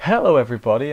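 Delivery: voice cracking. Opening an anime review episode, greeting everybody, voice cracking. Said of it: "welcome to the voice crack that I just had".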